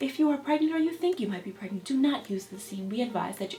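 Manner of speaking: TV commercial announcer voice. Reading a warning line and noting it sounds like a TV commercial: TV commercial disclaimer voice. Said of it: "I sound like one of those things off The Commercial".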